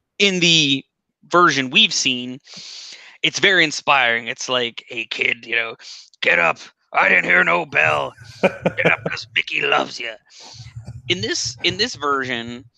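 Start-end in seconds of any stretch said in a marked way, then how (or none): 4.9-10.2 raspy, rough, urging coaching voice. Retelling a film scene in which Mickey urges the fighter to get up: raspy Burgess Meredith impression. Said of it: "That's a good impression".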